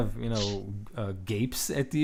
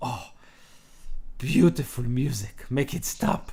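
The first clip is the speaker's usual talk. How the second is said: sweet, sugary, menacing voice with a deadly edge. Voicing a young elf interrupting a bard's flute performance: sweetly menacing elf. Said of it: "looks at you with a smile that could kill".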